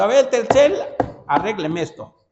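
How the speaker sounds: pushy demanding tone. Acting out how customers now arrive demanding service, mock-demanding customer tone. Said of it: "Ahora llegan exigiendo".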